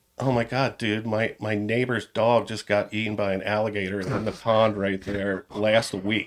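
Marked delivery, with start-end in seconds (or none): none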